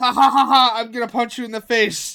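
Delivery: mock laughing while speaking. Cashier retelling a customer's words while scanning his items, imitating someone laughing. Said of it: "He's laughing".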